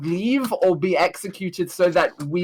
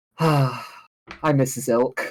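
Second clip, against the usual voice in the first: drawn-out, slow, private half-whisper; 4 semitones lower than usual. Voicing Zelthana, who sees her healer is exhausted: Zelthana half-whispering to herself. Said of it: "Zelthana just whispers to herself".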